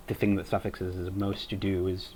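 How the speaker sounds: normal talking voice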